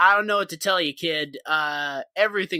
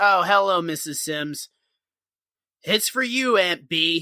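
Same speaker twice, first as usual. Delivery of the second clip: play-acted begrudging, resentful, forced politeness. Retelling Barney answering the phone for Aunt B: imitating resentful speech. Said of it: "resentful about it".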